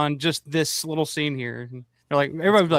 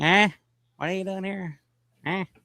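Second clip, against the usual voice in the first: put-on old codger way of talking; 4 semitones higher than usual. Joking about struggling with the tech setup: put-on old man voice. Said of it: "I'm an old man".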